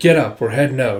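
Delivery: ordinary delivery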